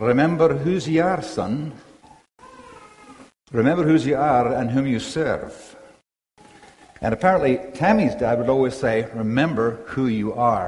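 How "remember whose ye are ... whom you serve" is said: put-on Scottish accent, swooping and sing-song. Retelling what his father always said to him before youth group, in a Scottish accent. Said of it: "in Scottish voice".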